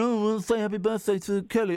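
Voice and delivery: repetitive phone-in radio caller voice. Retelling what callers keep phoning up to say: imitating birthday callers. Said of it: "they keep phoning up saying".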